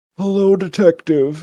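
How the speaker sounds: puppet voice, pitch rising high then dropping low. Asked for an impression, imitating the puppet's voice. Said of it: "do you have a good impression of him?".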